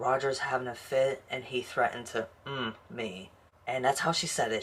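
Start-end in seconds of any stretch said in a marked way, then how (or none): none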